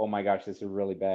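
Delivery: ordinary talk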